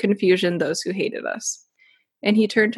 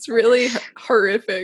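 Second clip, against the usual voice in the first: speech broken up by laughter throughout; 3 semitones higher than usual. Retelling a gruesome saint's story, laughing while talking. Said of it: "I don't know why I'm laughing".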